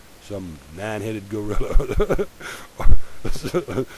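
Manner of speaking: slow, laughing through the words.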